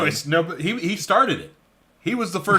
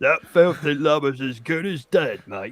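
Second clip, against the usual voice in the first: put-on Cockney accent; 3 semitones lower than usual. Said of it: "some dude with a Cockney accent".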